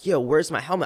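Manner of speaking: put-on stressed, frantic, panicky, freaked-out tone. Retelling looking for a missing helmet before a jump: imitating own freaked-out voice. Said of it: "I'm freaking out".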